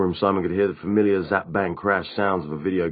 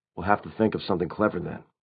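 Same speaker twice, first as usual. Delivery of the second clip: plain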